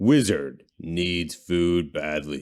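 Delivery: deep arcade game announcer voice. Player imagines the announcer from the game, Gauntlet Dark Legacy announcer voice. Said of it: "I imagine the guy from Gauntlet Dark Legacy".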